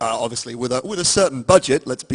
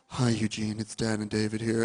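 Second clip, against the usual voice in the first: put-on sweet humble tone, lower and quieter; 3 semitones lower, 10 dB quieter than usual. Retelling a phone call from the producers: imitating a sweet, humble tone. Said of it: "kind of sweet, humble tone".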